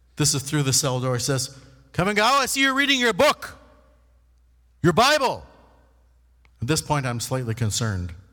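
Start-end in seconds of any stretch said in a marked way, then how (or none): 2.0-5.5 firm, stern, loud voice pitched very high. Retelling what a woman said to him through the cell door, mimicking her loud stern voice. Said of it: "she always talked kind of loud and sternly".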